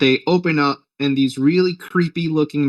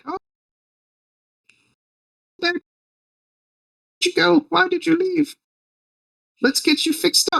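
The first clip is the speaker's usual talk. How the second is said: acted-out very high, delighted, overjoyed, gushing queen voice. Retelling a movie scene, voicing the queen: imitating a super happy queen. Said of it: "the queen is, like, super happy".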